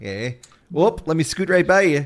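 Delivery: put-on American Midwestern accent. Explaining what an impression is, the speaker demonstrates one: Midwestern accent impression. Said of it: "I'm impersonating, you know, a Midwesterner".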